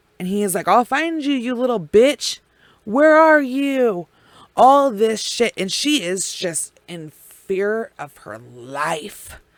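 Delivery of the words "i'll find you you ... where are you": acted-out, furious, menacing screamed yell. Retelling what he shouted while she hid in the slide: imitating someone screaming. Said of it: "and he's screaming".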